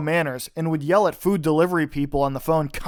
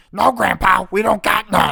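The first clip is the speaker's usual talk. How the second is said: loud, annoying voice, slow and rasping; 3 semitones higher, 5 dB louder than usual. Retelling a coworker's long phone calls: loud annoying Louie Anderson-like voice. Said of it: "Her voice was like a more annoying and loud impression of Louis Anderson".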